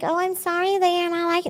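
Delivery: very high, sugary, acted super-sweet tone. Retelling how they used to answer: imitating own past super sweet voice. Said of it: "I used to be super sweet and nice and be like".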